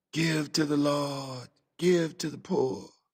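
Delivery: slow, husky murmur like prayer. A narrator reads a man jangling his coin box, husky, prayerful murmur. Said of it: "murmured in his husky, prayerful voice".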